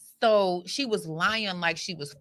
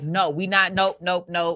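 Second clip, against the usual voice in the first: acted-out panicked voice, louder; 7 dB louder than usual. Acting out a phone call to a sister who stopped roadside: acting out panic. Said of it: "I'm panicking on the other side".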